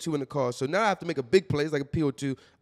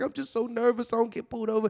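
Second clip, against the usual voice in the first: put-on tearful girl-like crying voice, higher; 8 semitones higher than usual. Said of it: "see her crying".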